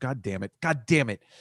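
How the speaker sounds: exasperated, frustrated, angry swearing, temper rising. Reluctantly picking the Patriots to win the game: getting angry. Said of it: "Sorry, I'm getting angry".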